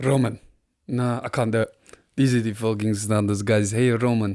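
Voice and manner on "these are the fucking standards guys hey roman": put-on strong Polish-sounding accent. Trying again to do Arteta talking to Roman on the plane, in an Arteta voice, sounding Polish. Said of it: "now I'm making him sound Polish".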